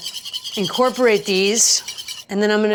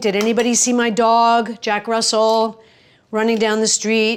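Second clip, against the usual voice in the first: ordinary delivery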